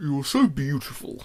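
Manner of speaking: deep, heavy, slow, drawn-out manly voice. Retelling a toy's unexpected line: deep, slow, manly voice. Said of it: "in a deep, slow, manly voice".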